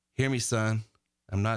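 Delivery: softly spoken. Retelling what Coach Dean Smith told a student: imitating Dean Smith speaking softly. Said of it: "he said it in a soft way".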